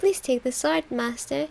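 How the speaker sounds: put-on sweet, cute anime maid girl voice. Narrating a delusion, voicing the shopkeeper maid in a cute anime maid voice. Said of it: "she spoke to me in an anime voice".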